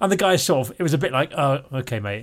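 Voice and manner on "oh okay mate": put-on grudging, doubtful, unconvinced tone. Retelling a stranger's reply after an excuse: imitating an unconvinced reply. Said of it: "not a hundred percent believing it".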